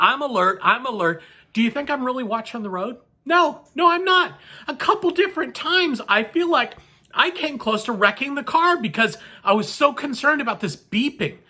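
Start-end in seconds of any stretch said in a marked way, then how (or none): none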